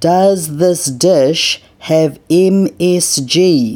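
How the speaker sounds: very slow, loud, exaggerated word-by-word over-enunciation. She asks about a dish on the menu, enunciating slowly and loudly. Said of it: "She enunciates slowly and loudly".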